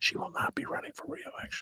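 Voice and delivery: very quiet, hushed whisper. Retelling the secret phone calls about a candidate: imitating a whispered tip-off. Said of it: "I'm gonna whisper it like the whisperers".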